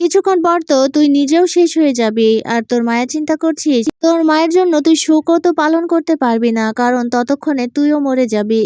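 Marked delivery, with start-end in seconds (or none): none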